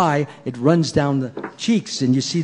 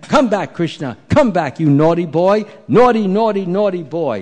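angry, high-pitched, scolding tone; 5 semitones higher, 3 dB louder than usual. Telling a story as the mother chases Krishna with a stick: Mother Yashoda's angry scolding. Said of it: "And she's talking like this".

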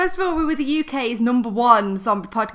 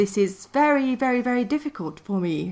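put-on posh, upper-class English accent. Taking turns trying posh accents, one speaker attempts a posh british accent. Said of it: "That's very good, though".

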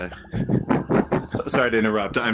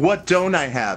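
usual speaking voice

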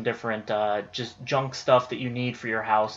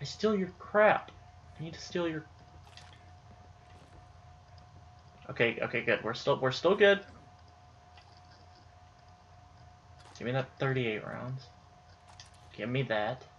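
whisper, much quieter and slower; 7 dB quieter than usual. Streamer stealing items from a game character: whispering. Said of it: "I don't know why I'm whispering".

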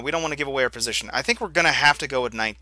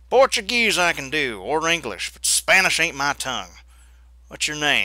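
put-on frontier cowboy voice; 3 semitones higher than usual. Narrator reading Josiah's reply to a woman speaking Spanish, in cowboy voice. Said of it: "I'm going to just do the cowboy voice".

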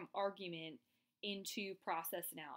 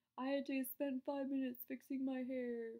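acted-out high, whiny griping tone; 5 semitones higher than usual. Presenter acting out a weak argument example for the audience, mock-whiny tone. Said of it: "that kind of whiny tone".

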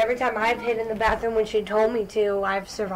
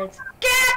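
very high-pitched, loud shout. Showing how the name must be said: shouting the name Gak. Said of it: "You gotta shout when you say it".

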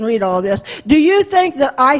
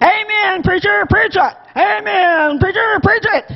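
mock high shout with long drawn-out amen; 5 semitones higher than usual. Telling a story of an old lady shouting to the preacher: retelling an old lady's shout. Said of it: "she shouted".

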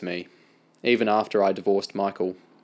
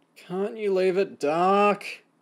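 very high-pitched, drawn-out groaning moan; 11 semitones higher than usual. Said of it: "Amy moaned from under her covers".

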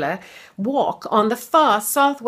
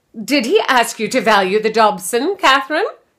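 insistent, hard-pressing, demanding tone; 4 dB louder than usual. Edith puts a question to Catherine in front of Rupert and Mum, demanding. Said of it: "Edith demanded".

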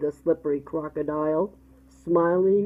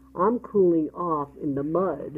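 ordinary delivery

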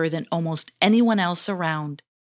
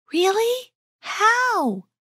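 very high, delighted voice; 14 semitones higher than usual. Narrating a story, voicing a character's question: delighted. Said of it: "asked Asuman in a delighted voice".

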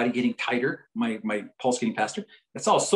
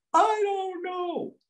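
put-on very high, screeching, screaming yell. After asking a man why he's mad, the speaker retells his answer, retelling a scream. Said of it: "He screams at".

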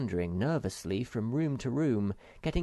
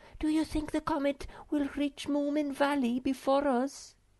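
whispered, much higher pitch. Reading a character asking companions on the way home: whispered. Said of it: "whispered the Snork Maiden".

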